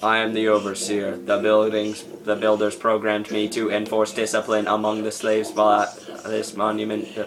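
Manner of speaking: flat, monotone, mechanical robot voice. Voicing an overseer droid's lines at the ruins: generic robot voice. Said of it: "There's my generic robot voice".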